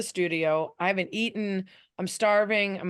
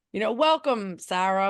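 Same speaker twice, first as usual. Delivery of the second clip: put-on New York accent. A new panelist retells how the host greets newcomers, in Tony Reali's New York accent. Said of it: "which is his New York accent".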